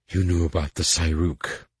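hissing with disgust. A woman held tight in a man's grip accuses him, hissing with disgust. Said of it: "Melinza hissed".

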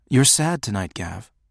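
plain reading voice

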